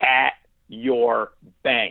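play-acted firm no-nonsense tone, very stern. Retelling a woman speaking through the wall, imitating a firm voice. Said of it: "in the most firm of voice".

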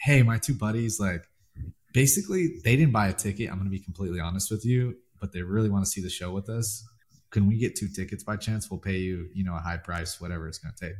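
ordinary delivery

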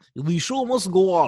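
Russian accent on every word. Repeating a line after being asked to: russian accent. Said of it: "Say it in a Russian accent".

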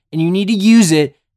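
fired up.

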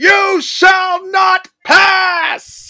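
very high, very loud, very slow bellowed yell. Pitching a character's ultimate move, the speaker yells its quote. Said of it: "I gotta stop yelling".

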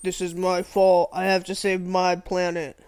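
flat, level, slow, drawn-out robot voice. Mocking a movie robot leader's emotional speeches: imitating Optimus Prime. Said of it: "He's like".

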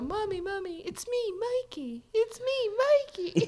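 put-on very high, sweet, slow little-boy voice. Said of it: "It was so cute".

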